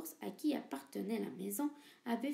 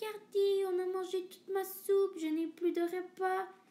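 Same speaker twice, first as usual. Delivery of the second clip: put-on tiny, high, crying and wailing baby-bear voice; 7 semitones higher, 5 dB louder than usual. Narrator reading a bears' fairy tale, voicing baby bear in a tiny crying voice. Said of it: "pleura bébé ours avec sa toute petite voix".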